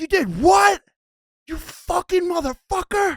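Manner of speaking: shrill, loud outraged outburst. Retelling a fish dinner, the speaker plays his friend's dad reacting: imitating Frank losing it. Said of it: "His dad is fucking losing it".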